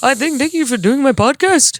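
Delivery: put-on, fake Indian accent. Thanking someone for doing the podcast: put-on Indian accent. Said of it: "now you're Indian".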